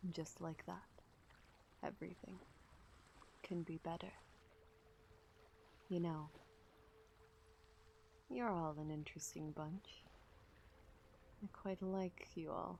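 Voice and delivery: close, breathy whisper right at the ear. A new voice speaks to the listeners with hands on their shoulders, whispering in your ear. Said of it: "whispering in your ear. He goes".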